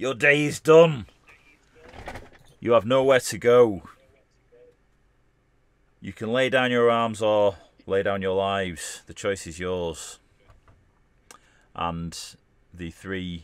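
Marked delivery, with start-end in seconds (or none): 0.0-10.2 very loud, booming, authoritative commanding voice. Voicing a pirate captain demanding surrender after a battle: commanding voice. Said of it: "with a commanding voice".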